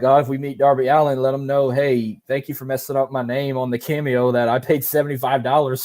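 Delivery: ordinary delivery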